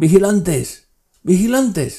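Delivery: yelling out, loud, very high-pitched shout. An old man calls out for the watchmen to come, shouting loudly. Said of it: "¿Por qué gritas tan fuerte".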